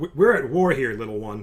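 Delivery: scornful, derisive, talking-down voice. Voicing a guard who talks down to a short character: derisive guard voice. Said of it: "he's talking very derisively at you".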